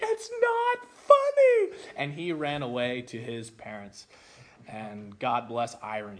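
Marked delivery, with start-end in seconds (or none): 0.0-1.8 acted sobbing, very high, loud, tearful wail. Retelling a fight, the speaker quotes the boy who punched him, imitating someone crying. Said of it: "He started crying and saying".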